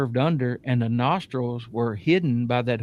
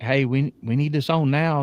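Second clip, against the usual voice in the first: imitated panicked voice; 2 semitones higher than usual. Retelling own words to a crew member with a thermal camera: retelling own panicked words. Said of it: "I'm kinda panicking".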